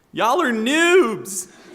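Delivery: very high, shrill, very loud dramatic shout. Retelling how she yelled after a drive-through got her order wrong: retelling a loud dramatic yell. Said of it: "in a very loud and dramatic voice".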